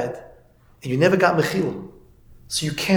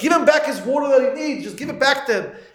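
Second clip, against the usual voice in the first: frantic, shrill, very high-pitched screaming; 9 semitones higher than usual. Retelling how the bus driver screamed at the kids on the bus, imitating a bus driver screaming. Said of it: "the bus driver started screaming at us".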